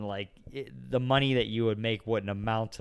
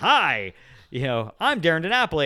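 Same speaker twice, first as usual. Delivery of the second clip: loud, booming, swooping show-announcer voice; 6 semitones higher, 7 dB louder than usual. Recalling how they used to call people up: loud tv announcer voice. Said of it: "like this T V show announcer like calling them up and I would be like real loud".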